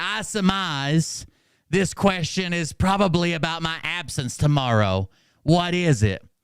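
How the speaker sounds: weird, unhurried teacher voice with slow, drawn-out delivery. Retelling what a teacher said: imitating his slow, weird talk. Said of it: "he talked real slow".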